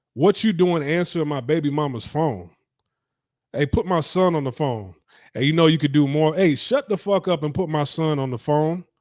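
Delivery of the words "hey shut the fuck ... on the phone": usual speaking voice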